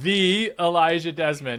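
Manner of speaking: heavy emphasis on the word "the". Host introducing a guest by name, stress on the. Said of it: "why do I emphasize the when I introduce you".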